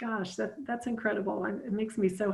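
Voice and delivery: happy, tearful, overjoyed crying through words. Speaking to Meg about what her family has done, crying tears of joy. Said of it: "I'm crying tears of joy".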